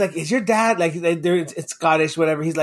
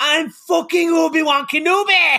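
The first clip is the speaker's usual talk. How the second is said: put-on Scottish accent, much higher, louder; 10 semitones higher, 3 dB louder than usual. Retelling a story about a kid, quoting him in a scottish accent. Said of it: "his Scottish accent came through".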